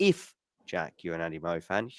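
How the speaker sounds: huge emphasis on the word if. Asking Jack whether he is a fan, with strong stress on if. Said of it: "huge emphasis on the word if".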